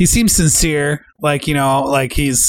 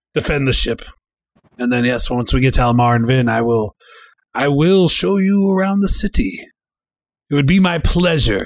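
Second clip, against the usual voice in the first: put-on vampire-ish accented voice. Voicing a ship's host offering help to the party: accented NPC voice, vampire-ish at end. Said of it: "hearing you do this voice again".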